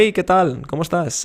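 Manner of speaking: high, grating, eager-to-please, approval-seeking voice. Dating advice, showing a nervous man greeting a girl: high, grating approval-seeking voice. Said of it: "hablar así para buscar su aprobación ... esa voz aguda".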